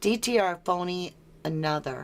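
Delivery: ordinary delivery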